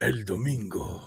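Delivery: weighty, emphatic, deep delivery of El domingo. Repeating how a dude said the spanish for sunday, deep emphatic delivery. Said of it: "the dude said it with like this like deep emphasis".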